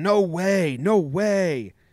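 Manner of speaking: acted out, very slow, drawn-out delivery. Retelling how the dugout yelled at the umpire: imitating people yelling. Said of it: "the dugout just starts yelling".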